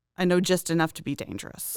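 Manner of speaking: ordinary talk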